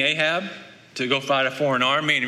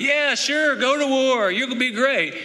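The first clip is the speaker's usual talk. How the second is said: mock, very high-pitched, laid-on sarcastic tone; 11 semitones higher than usual. Retelling the prophet answering Ahab's question about going to war; Micaiah's sarcastic reply. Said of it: "he must have been kind of a sarcastic guy".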